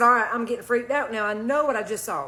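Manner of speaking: usual speaking voice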